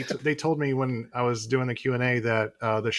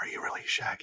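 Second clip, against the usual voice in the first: hushed, breathy whisper. Retelling how a young daughter asked a question: imitating a whisper.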